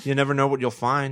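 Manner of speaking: put-on meek voice. Retelling how a film ends: imitating Bud Cort. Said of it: "Bud Cort going like".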